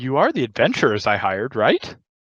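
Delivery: worried, anxious, uneasy tone. Game master voicing a character who pauses and looks at the adventurers, worried tone. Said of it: "Kind of with a worrying tone in his".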